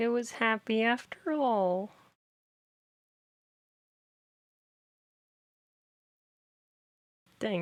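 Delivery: tearful, crying while talking. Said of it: "now I'm actually crying".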